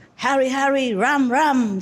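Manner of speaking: forceful, authoritative delivery. Showing the way she said the words: powerful, authoritative voice. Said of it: "so authoritatively, it's more powerful than what I'm saying normally. Say, ... see, like that".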